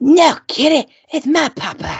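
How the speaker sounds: very high, slow, put-on character voice. Answering a request to do an old impersonation: impersonation of a TV character. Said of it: "it was an impersonation. Can you still hit it?".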